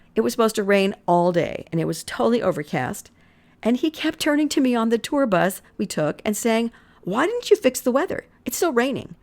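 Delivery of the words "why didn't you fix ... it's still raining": mocking, needling, sarcastic teasing, pitched up. Retelling a husband's remark on a tour bus: imitating sarcastic teasing. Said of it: "he was kinda being sarcastic and razzing me".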